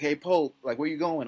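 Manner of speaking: mock half-yelled, mild yell calling out. Retelling how a teammate called out across the gym: imitating a teammate yelling. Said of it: "Eric's yelling at me".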